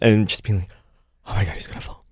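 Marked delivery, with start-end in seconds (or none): 1.3-1.9 put-on worried whisper, quieter. Retelling how Fraser reacted during a show: imitating Fraser whispering. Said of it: "he'd just be whispering to".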